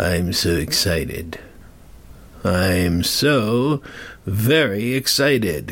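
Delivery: low, very slow, drawn-out sarcastically thrilled voice. Speaker who dislikes daylight saving time announces it begins Sunday, sarcastic excitement. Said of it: "Can't you hear it in my voice?".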